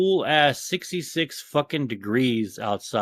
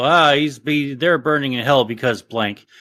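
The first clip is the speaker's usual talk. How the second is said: ordinary talk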